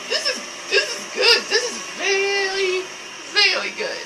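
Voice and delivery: high voice, laughing through words.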